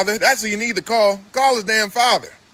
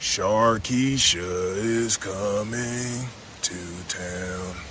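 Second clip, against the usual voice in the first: deep, very low, very slow, word-by-word delivery; 11 semitones lower, 7 dB quieter than usual. Warning shoppers so they understand, speaking very slowly. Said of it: "I'm gonna say it real slow so you understand".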